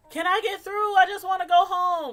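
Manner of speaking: high, loud yell. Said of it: "start yelling".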